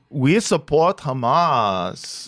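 put-on Israeli accent. Parodying two American college students in a sketch: put-on Israeli accent. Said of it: "my Israeli accent is going to change".

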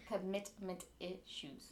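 slow, soft, careful enunciation, spelled out. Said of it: "For those who couldn't understand".

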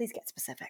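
soft, tender, gentle whispered voice. Asking someone to get specific: very gentle voice. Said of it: "in my gentlest voice".

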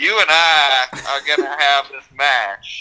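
put-on slow, drawling, stretched-out Southern accent. Quoting a woman telling Natty they will have this match: slow southern drawl. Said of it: "she's got that slow southern drawl".

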